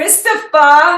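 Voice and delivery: loud, high, belted New Jersey accent. Asked by the interviewer to say a name in his New Jersey voice: New Jersey accent. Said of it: "Can you say Christopher in in your New York, uh, New Jersey voice?".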